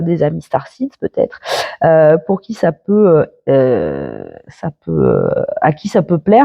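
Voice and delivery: fumbling, tripping over words, drawn-out "heu" fillers. Signing off to followers on a Sunday, stumbling over words. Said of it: "je je bafouille".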